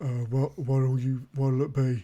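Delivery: really bored, listless, disinterested tone. Voicing a man who stops cleaning and speaks up: really bored tone. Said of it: "he just says in a really bored tone".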